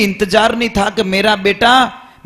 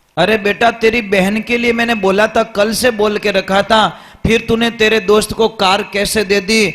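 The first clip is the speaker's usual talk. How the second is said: plain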